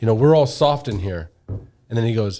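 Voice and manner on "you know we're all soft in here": normal talking voice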